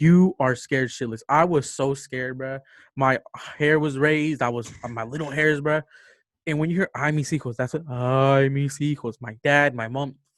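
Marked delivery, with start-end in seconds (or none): 7.9-9.1 mock wailing cry, woman's voice, much slower. Telling a scary story outside in the dark, imitating a woman wailing. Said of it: "like she's crying, like wailing".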